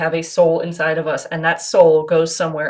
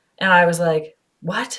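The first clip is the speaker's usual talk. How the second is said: ordinary delivery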